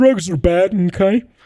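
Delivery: high cartoon teacher voice. Retelling what a teacher said at school: Mr. Mackey voice. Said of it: "basically doing Mister Mackey from, from South Park".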